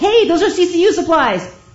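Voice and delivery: loud, high yelling.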